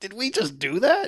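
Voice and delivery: put-on high, slow words laughed out in amazement. Retelling how a character reacts after smashing the bank: imitating Paul Walker laughing. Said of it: "flat out laughing".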